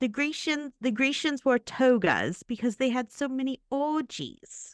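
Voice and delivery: put-on New Zealand accent. After hearing a voice memo, a person repeats the sentence; imitating a New Zealand accent. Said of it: "like the Kiwi Queen herself".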